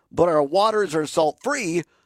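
plain

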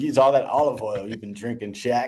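usual speaking voice

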